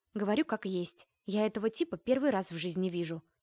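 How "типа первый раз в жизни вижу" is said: plain reading voice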